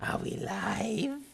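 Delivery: high, rasping, creaky gremlin creature croak. Host doing the show's intro: gremlin voice. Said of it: "I like the Are We Live in Gremlin voice".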